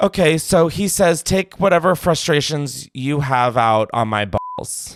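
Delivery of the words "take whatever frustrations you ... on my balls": usual speaking voice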